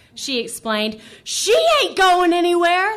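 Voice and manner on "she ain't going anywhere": shrill, very loud, high-pitched scream. An angry driver honking at a waiting car screams back at the other driver, screaming. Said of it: "the woman screamed".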